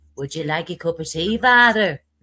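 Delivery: low voice in an Irish brogue. Chatting with others about Father Ted, the speaker does a Mrs Doyle impression. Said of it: "my Missus Doyle impression".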